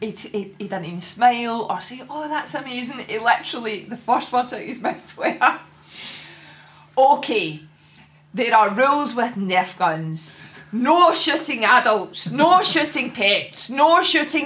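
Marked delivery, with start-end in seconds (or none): none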